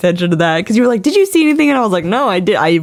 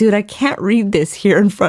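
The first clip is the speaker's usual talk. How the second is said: put-on bawling, crying voice. Retelling opening a sweet note from a friend: retelling own words while bawling. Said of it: "I'm literally bawling".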